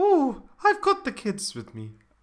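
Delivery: very high, loud, swooping Scottish accent. Joking with another speaker, slipping into a Mrs. Doubtfire voice. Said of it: "You're doing like a Mrs".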